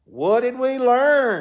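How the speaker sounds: mock thick Texas accent. Retelling what a cardiologist from texas said after a heart attack: imitating a thick texas accent. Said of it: "he still had a really thick accent".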